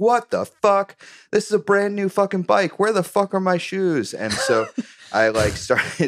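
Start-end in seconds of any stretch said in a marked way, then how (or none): 0.0-4.1 put-on very high, outraged, furious screaming. Retelling rolling off a man's car onto the road, reenacting screaming at him. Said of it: "I start screaming at him like".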